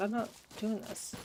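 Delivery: plain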